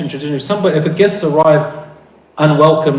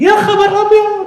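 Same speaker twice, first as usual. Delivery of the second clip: acted-out very high, shrieking woman's scream. Showing how egyptian women scream in shock: imitating egyptian women screaming. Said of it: "Egyptian women do it best when they scream like that".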